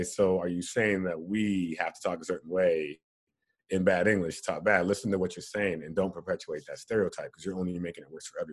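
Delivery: ordinary delivery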